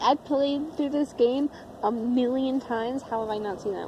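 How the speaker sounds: ordinary delivery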